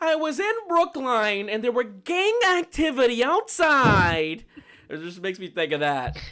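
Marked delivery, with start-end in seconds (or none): 0.0-4.4 very high, loud, slow news-reporter voice. Laughing with a friend over his wording, the speaker is imitating a news reporter. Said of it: "the news reporter is like".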